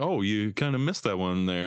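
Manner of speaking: put-on, good-natured, friendly teasing tone. Retelling a friend's teasing while bowling: imitating Salim's friendly trash talk. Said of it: "a nice talking shit".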